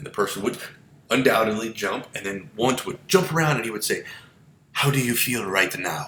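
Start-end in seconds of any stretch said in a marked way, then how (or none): 4.7-6.1 poor, clumsy put-on German accent. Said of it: "in a much better German accent than that was".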